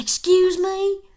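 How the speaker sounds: shrill, high, loud put-on country accent. Retelling what a lady said to the speaker, in a redneck country voice. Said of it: "redneck ass country voice".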